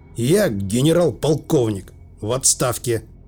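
ordinary delivery

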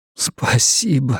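hoarse croak, fighting back tears. A newly arrived man, welcomed by a woman, croaks while fighting back tears. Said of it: "просипел он".

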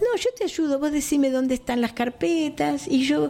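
high, sweet little voice.

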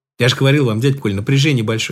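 plain

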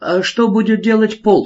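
high-pitched, wary, suspicious tone. Asked what he proposes, the speaker answers with a question, suspicious question. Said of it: "с подозрением спросил тот".

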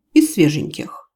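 plain

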